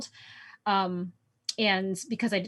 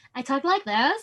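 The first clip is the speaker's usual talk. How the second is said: high, put-on snobby, overconfident Valley Girl voice; 5 semitones higher than usual. Player describing her snobby campaign character and showing how she talks, in a Valley Girl voice. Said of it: "I'm very good at that Valley Girl voice".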